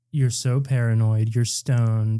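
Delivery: berating, scolding telling-off. Retelling how Lauren scolded him for being paranoid: imitating Lauren berating. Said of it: "She was in the middle of berating me".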